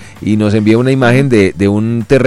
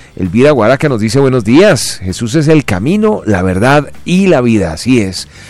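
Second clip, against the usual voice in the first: ordinary delivery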